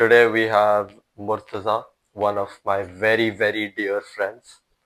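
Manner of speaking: slow, ironic, tongue-in-cheek, sarcastic. Introducing a dear friend as guest at the start: sarcastic. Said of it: "I love the sarcasm".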